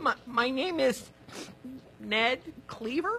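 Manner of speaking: hesitant, unsure, rising questioning tone. Giving own name to a strict teacher: unsure, question-like rising tone. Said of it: "Are you asking me or telling me?".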